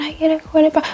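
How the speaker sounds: faint, soft half-whisper, barely there. Retelling drive-thru customers half-whispering orders at the mic, imitating a customer half-whispering. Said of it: "They they whispering like".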